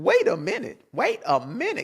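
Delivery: big, bouncy, animated put-on voice, pitch swinging widely. Reacting to a claim he finds racist: Katt Williams voice. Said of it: "Cat William voice".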